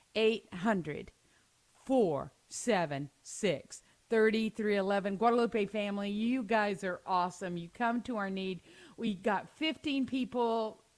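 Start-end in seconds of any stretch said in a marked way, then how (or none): 0.1-5.1 slow, deliberate, digits spaced out one by one. During a matching gift hour, reading the donation phone number to listeners: saying the number slowly. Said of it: "I'm going to say the number slow".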